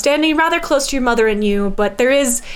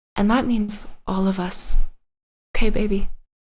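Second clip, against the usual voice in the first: very quiet half-whisper, almost inaudible; 2 semitones lower than usual. Narrating a farewell scene, voicing the mother to her child: very quiet half-whisper. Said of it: "whispers so quietly, you almost miss it".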